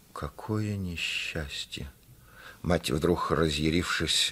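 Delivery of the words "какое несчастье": faint, scarcely voiced, barely audible whisper. The narrator reads the crushed father reacting to the mother's plan: barely audible whisper. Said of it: "еле слышно прошептал".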